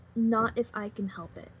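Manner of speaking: normal talking voice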